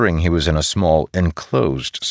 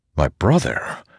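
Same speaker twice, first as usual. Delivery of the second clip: ordinary delivery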